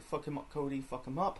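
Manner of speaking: ordinary talk, nothing marked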